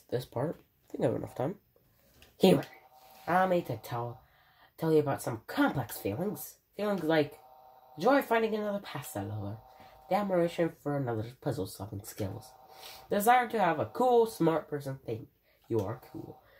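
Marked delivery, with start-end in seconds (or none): 2.4-16.3 high, swooping, throat-straining voice. Reading a game character's lines aloud: Papyrus voice. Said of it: "his voice is hurting my throat".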